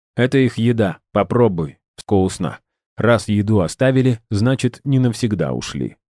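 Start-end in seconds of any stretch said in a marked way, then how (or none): none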